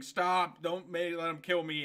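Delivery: normal talking voice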